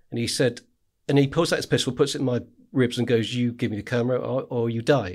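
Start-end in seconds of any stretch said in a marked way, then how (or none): 3.3-5.1 mock pidgin English speech. Retelling a man's threat with a pistol: imitating pidgin english. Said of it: "he can speak pidgin English".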